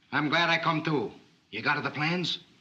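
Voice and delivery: strange put-on Italian accent. Greeting a host who then says you sound strange: strange Italian-accented voice. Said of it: "you sound so strange".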